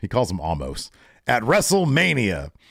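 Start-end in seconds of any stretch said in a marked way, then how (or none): 1.3-2.4 put-on ring announcer voice, higher in pitch. Retelling how a wrestler announced a match: Paul Heyman announcer voice. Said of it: "Brock does his best announcer voice".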